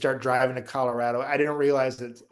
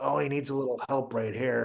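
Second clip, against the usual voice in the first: put-on muttering under breath, much quieter; 4 dB quieter than usual. Speaker telling about a man commentating beside them, imitating his muttering under breath. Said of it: "talking under his breath, like he's commentating".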